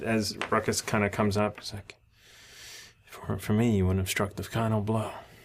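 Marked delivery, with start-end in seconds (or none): 3.1-5.1 quiet mutter under the breath. Voicing a character who mutters to another: muttered under his breath. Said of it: "under his breath".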